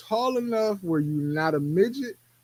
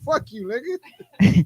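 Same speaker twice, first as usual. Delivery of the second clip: higher-pitched, defiant clapback tone; 7 semitones higher, 4 dB louder than usual. Imagining a kitchen stare-down with a girlfriend: imitating a defiant girlfriend. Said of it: "I'm trying to get you to do some shit and you like".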